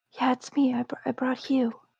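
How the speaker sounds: soft, hushed whisper, stumbling a little. Answering a whispered 'is it you?' in a quiet place, whispering. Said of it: "Still whispering".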